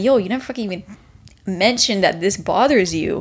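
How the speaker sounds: usual speaking voice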